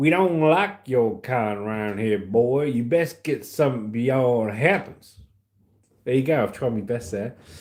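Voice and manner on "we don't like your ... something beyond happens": broad, thick, heavy put-on Alabama drawl. Reading out a sent message on the show, in a thick Alabama accent. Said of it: "Thick Alabama accent".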